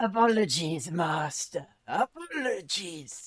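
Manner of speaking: solemn, grave shouting. Voicing a misshapen carriage driver calling through fog: shouting graven voice. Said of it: "a graven voice shouts through the".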